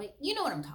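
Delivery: high, fast, emphatic, knowing tone.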